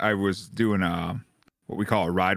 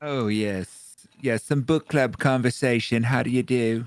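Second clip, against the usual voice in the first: put-on overprivileged, posh lady voice; 3 semitones higher than usual. Speaker launches into a mock book club conversation; overprivileged Vermont lady voice.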